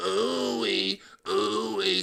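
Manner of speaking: very slow, drawn-out, breathy talk-box voice. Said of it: "don't she sound like [name] and Zapp".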